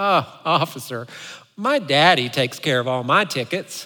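put-on woman's southern drawl. Retelling Kathy's reply to a police officer, in Kathy's southern drawl. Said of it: "in her southern drawl".

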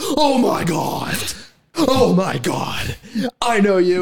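acted very high, very slow, drawn-out freaking-out shriek. Retelling how a woman reacts on meeting Jason: imitating someone freaking out. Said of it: "And she freaks out".

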